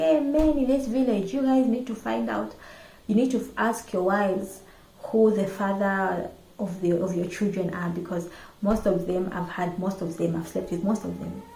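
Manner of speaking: ordinary delivery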